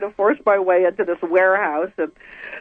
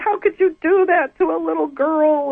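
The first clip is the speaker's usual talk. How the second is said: full-on screaming, pitched up high; 8 semitones higher than usual. Retelling confronting the man who hurt her as a little girl, retelling her own screaming. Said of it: "I'm screaming at him like I never did before".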